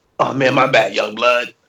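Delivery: small, cigarette-sounding smoker's voice. Retelling what a guy said to him, little cigarette-y voice. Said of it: "with his little cigarette-y-ass voice".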